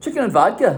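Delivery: Scottish accent, put on for effect. Showing how one would order a dish: Scottish accent. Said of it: "with a Scottish accent".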